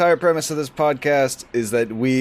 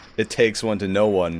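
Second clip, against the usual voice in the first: ordinary talk, nothing marked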